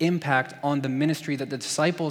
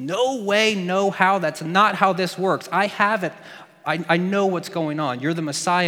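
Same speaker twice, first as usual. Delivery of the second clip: mock angry, indignant, insistent tone; 4 semitones higher, 4 dB louder than usual. Retelling how Peter rebukes Jesus: imitating Peter super ticked off. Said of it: "He gets super ticked and says".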